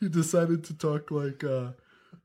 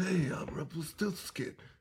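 whispered put-on voice. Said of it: "then he goes back to like".

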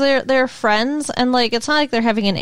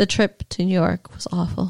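put-on deadpan delivery, lower; 5 semitones lower than usual. Redoing an impression of a woman from an episode, imitating her deadpan delivery. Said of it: "she's more deadpan".

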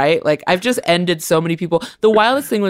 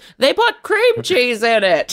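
pitched-up female voice; 7 semitones higher than usual. Retelling a heckler moment, quoting a woman in the crowd; impression of a woman in the crowd. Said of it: "That's a really good impression".

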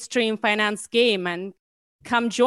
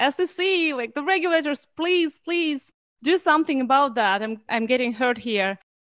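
mock hurt, pained, pleading, begging scream; 5 semitones higher than usual. Acting out a hurt Goliath calling on the regulators: mock screaming. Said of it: "he's, like, screaming".

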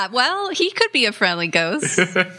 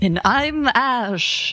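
scary, spooky haunted-house voice; 2 semitones higher than usual. Co-host introducing themself at the start of the episode in a scary Halloween voice. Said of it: "I was trying to do a scary Halloween voice".

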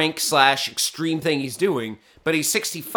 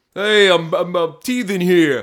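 loud, slow, full-on put-on New York accent; 5 dB louder than usual. Imitating a man in a diaper: put-on New York accent. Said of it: "Just full D-bat New York accent".

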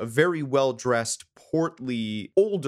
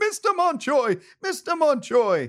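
very high, shrill, long-stretched, drawn-out screaming; 4 dB louder than usual. Narrating a game scene as a character is picked up: screaming. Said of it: "as he's screaming".

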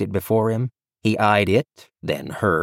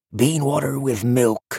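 high, theatrical stage whisper; 5 semitones higher than usual. Cal answers Tandry's question about the word: stage whisper. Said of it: "said Cal in a stage whisper".

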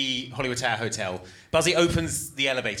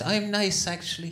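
sweet-sounding, high-pitched Irish brogue; 8 semitones higher than usual. Describing a story, the speaker voices the witch's claim to be nice: sweet Irish brogue. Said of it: "she's got like a sweet Irish brogue".

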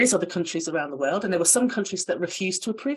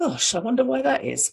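mocking, dry, sarcastic delivery; 6 semitones higher than usual. Explaining a medication study to an audience, sarcastic. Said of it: "That's me being sarcastic".

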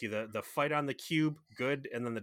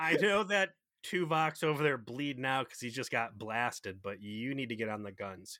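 ordinary talk, nothing marked

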